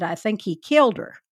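put-on broad, strong Scottish accent laid on thick. Retelling a story, the speaker quotes a man's answer in a strong, thick scottish brogue. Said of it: "in a strong, thick Scottish brogue".

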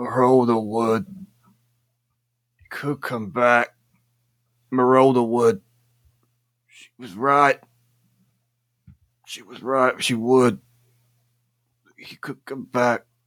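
feeble, weak voice. Voicing a weakened character reaching out, repeating broken words: feeble, weak voice. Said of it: "with a very feebled hand".

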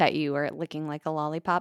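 ordinary talk

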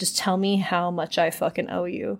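usual speaking voice

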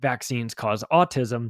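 ordinary talk

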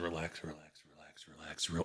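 very quiet, low murmur, close by. Voicing a healer pressing on a patient's neck: saying it very low. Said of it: "he's saying it very low".

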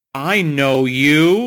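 loud, accusing, pointed delivery, acted out. Retelling a stranger on the bus recognizing him: accusatory tone. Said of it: "like, accusatory".

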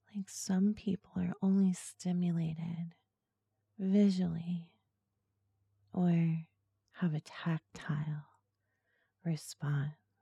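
slow, seductive, hypnotic ASMR voice. Speaking to listeners once the hypnotic ASMR voice gets going. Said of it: "once I get my hypnotic ASMR voice going".

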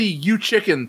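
plain

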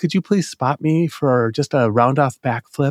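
timid, humble, meek and mild. Retelling asking a gymnast at the gym for a spot, pretending to be meek and mild. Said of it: "I'd pretend to be meek and mild and say".

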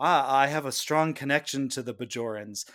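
usual speaking voice

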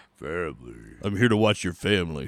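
put-on very deep voice, words slightly slurred. Joking about doing a dub of the film, Vin Diesel voice. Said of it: "We can do a Vin Diesel voice".

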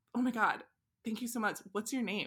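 ordinary talk

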